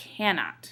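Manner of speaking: first syllable CAN stressed in cannot. Scanning a line in iambic pentameter: stress on can in cannot. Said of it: "But to make it iambic pentameter, we have to say cannot".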